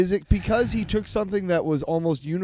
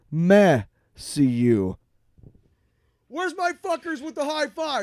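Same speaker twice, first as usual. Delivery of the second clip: mock proud, higher-pitched tone; 6 semitones higher than usual. Mocking a video by The Quartering, imitating The Quartering's proud tone. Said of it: "the pride in his voice when he was like".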